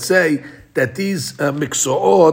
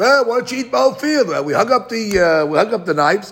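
sarcastic, falsely generous, pitched-up tone; 6 semitones higher than usual. Retelling the field owner's invitation to the rabbis: imitating a sarcastic tone. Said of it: "He was saying it like, uh, sarcastically".

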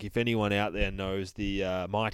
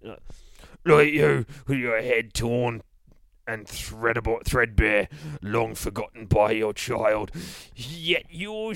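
put-on comic Cockney accent in a boogeyman voice; 2 semitones higher, 4 dB louder than usual. Reading the boogeyman taunting a teddy bear: Mighty Boosh Cockney voice. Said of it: "says the fucking boogeyman. ... maybe we'll read him as the Cockney from The Mighty Boosh".

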